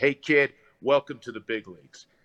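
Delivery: large, booming voice. Retelling how the listener's dad greeted them, imitating a big voice. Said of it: "that big voice of his".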